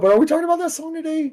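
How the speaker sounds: odd, very high jumping voice. Questioning the other speaker mid-conversation, the speaker's voice goes high. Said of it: "I don't know why my voice got high".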